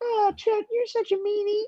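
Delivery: high teasing impression.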